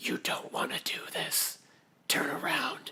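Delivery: very quiet, breathy, barely voiced whisper. A player's character whispers a message to the goblins: whisper. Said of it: "I'm just going to whisper".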